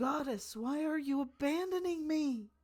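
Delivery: very loud, high-pitched scream. Voicing a woman in a trance screaming at a bowl: screaming at a goddess. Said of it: "she is just screaming at this bowl".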